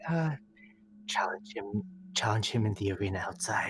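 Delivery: slow, unhurried, hushed whisper. Voicing a character whispering into an earring: whispering. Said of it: "Ellen just whispers into the earring".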